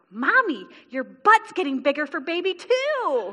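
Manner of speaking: put-on high, rising, sing-song excited little kid voice. A mother retells what her little daughter said, imitating Jessamine's excited voice. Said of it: "And that same excited voice".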